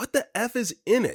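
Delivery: mock excited near-yell, very high. Retelling calling out to him as the lid opens, retelling practically yelling. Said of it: "I'm practically yelling".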